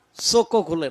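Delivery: ordinary delivery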